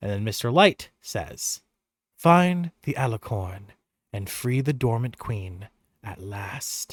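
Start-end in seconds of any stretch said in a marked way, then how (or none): 2.2-6.9 faint whispering, lower. Voicing Mister Light giving a parting instruction: faint whispers. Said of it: "the faint whispers of Mister Witch and Mister Light".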